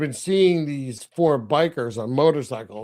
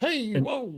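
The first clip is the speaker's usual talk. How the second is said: put-on old prospector voice, higher and quieter; 9 semitones higher, 4 dB quieter than usual. Retelling Pop reacting to bikers circling him: imitating Pop's old prospector voice. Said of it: "he sounds like an old prospector".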